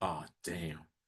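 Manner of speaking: breathy, nervous undertone. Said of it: "she all nervous".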